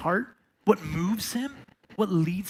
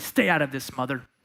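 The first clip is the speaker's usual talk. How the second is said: mock low, disapproving, reproachful, critical tone; 5 semitones lower than usual. Telling a story, the central figure turns to his mother, critical. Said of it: "Jesus turns and says critically".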